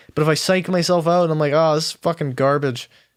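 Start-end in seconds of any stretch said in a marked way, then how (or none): none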